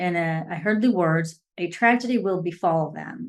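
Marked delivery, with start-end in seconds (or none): none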